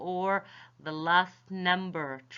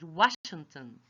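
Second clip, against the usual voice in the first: last word Washington stressed; 2 semitones lower than usual. In an English pronunciation lesson, repeating the example name with stress on Washington. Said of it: "you should stress the last word of the name".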